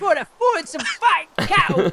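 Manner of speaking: put-on old London man voice. Echoing the other speaker's line back at them, old London dude voice. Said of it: "You sound like one of those old London dudes".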